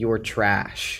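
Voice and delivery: ordinary delivery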